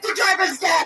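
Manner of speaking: acted mad tone. Retelling telling someone the Uber driver was deaf, retelling it as if mad. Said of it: "it sounded like I was so mad about it".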